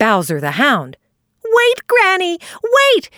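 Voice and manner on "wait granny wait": high-pitched call, crying out. Starting after old Granny Fox as she goes, crying out. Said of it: "he cried".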